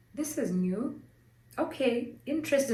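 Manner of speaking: mock unexcited, even-toned, calm, level voice. Retelling a husband's reply to twin news: imitating a calm, unexcited tone. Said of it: "No level of excitement, no raising of a voice".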